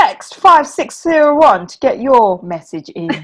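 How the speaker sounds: put-on mock radio show announcer voice. Joking after saying the chat sounded like a radio show, as a mock radio show host. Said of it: "Sounded like a radio show now".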